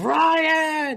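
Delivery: very high, stretched-out, drawn-out shriek. Retelling a movie scene where a character gets killed: imitating Alec Baldwin screaming.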